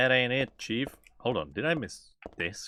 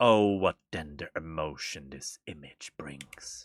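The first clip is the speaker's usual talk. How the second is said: eerie, creepy voice, lower and quieter; 7 semitones lower, 4 dB quieter than usual. Reading a game note aloud: creepy voice. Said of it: "gotta do a creepy voice".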